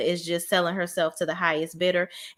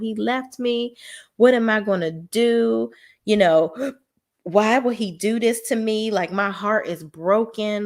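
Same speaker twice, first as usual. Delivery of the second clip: mock sobbing, higher and slower; 3 semitones higher, 4 dB louder than usual. Retelling a woman pouring her heart out to Nicole, imitating someone crying. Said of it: "she's like crying her eyes out".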